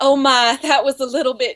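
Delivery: genteel put-on old southern grandmother voice, mildly shocked. Responding in conversation, in an old southern grandmother voice. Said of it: "something my old Southern grandmother would say".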